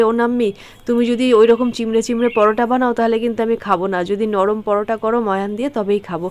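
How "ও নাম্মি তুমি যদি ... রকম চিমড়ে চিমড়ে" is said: usual speaking voice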